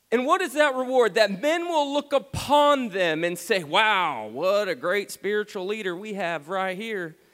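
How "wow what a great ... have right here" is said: voice slipping into a put-on country accent. Speaker quotes what men will say of a leader, in a country accent. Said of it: "my voice just went country".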